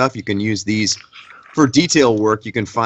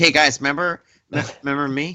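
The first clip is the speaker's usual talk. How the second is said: put-on young child voice, higher; 5 semitones higher than usual. Describing someone's Freddy as acting like a 7-year-old, imitating a young child. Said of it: "He's like a 7-year-old".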